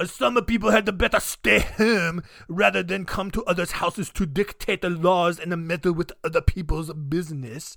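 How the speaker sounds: loose, attempted French-ish accent. Telling a story, quoting a man's reply in an attempted french accent. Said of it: "I don't know what accent that was. I wanted to go French on that".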